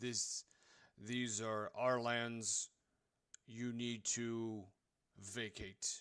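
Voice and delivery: very gruff, rough voice. Game master voicing a character answering the party, very gruff voice. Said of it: "answers in a very gruff sounding voice".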